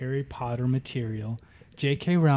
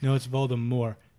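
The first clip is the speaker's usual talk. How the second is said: usual speaking voice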